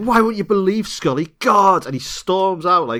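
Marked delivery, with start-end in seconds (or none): 0.0-1.8 mock, very high, childish, stroppy teenage whine. Retelling a scene where Mulder acts like a stroppy teenager: imitating Mulder's stroppy hissy fit. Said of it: "He's like a child".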